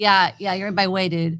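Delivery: put-on goth attitude voice. Showing how the sniper character should talk instead: put-on goth attitude voice. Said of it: "goth, like, attitude".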